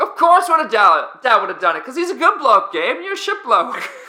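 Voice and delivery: poor put-on Australian accent. Retelling what someone across the room said about dal and gabe, subpar australian accent. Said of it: "your Australian accent is like subpar".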